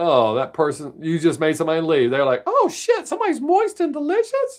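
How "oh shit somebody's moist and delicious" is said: very high, squeaky little cartoon mouse voice. Voicing a viewer's thoughts as they leave: Mickey Mouse voice. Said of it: "than the Mickey Mouse voice".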